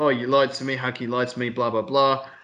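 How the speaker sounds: ordinary talk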